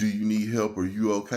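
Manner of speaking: ordinary delivery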